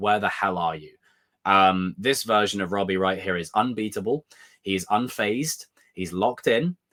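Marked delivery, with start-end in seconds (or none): none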